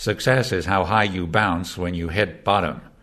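put-on plain American accent throughout. Quoting a famous saying he said, in an American accent. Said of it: "What do you think of that American accent?".

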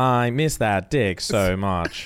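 flat, robotic, assistant-like read-out voice. Reading a text message aloud, Siri voice. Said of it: "In a Siri voice".

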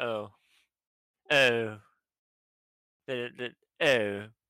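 put-on unimpressed man. Retelling how a man from birmingham reacted: imitating an unimpressed man. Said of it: "He wasn't very impressed".

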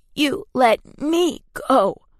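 high, metallic croaking voice. A narrator reads Genevieve's reply as she grips Mita's wrists, in a metallic croak. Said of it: "Genevieve's voice was a metallic croak".

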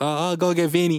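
put-on high-pitched little girl's voice. Retelling a movie scene at the pizzeria: imitating a small italian girl. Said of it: "small Italian girl's on the counter. She's like".

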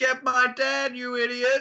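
acted, very slow, high-pitched, drawn-out, stretched scream. Retelling a film scene yelling at a policeman: imitating her screaming. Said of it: "she's screaming".

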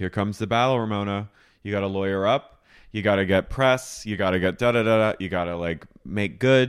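put-on, totally flat, dead-level deadpan with no affect. Retelling a friend's calm advice after an arrest: imitating Karen's flat affect. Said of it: "She says it with the flattest affect".

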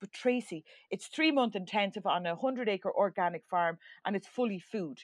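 ordinary talk, nothing marked

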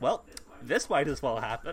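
ordinary delivery

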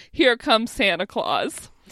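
ordinary delivery

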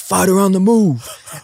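mock, shrill, very high, full-lung yell at top of lungs. Recounting a guy walking people down the hallway, imitating someone yelling. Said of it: "he just like yells at the top of his lungs".

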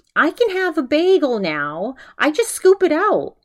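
very high, squeaked-up voice. Retelling how he imitated his mother: imitating his mom's voice. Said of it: "he starts imitating his mom's".

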